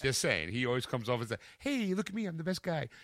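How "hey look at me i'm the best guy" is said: put-on, pushy, forcefully nice fake-friendly tone. Mocking someone who comes off as too nice: mock forcefully nice tone. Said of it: "that forcefully nice".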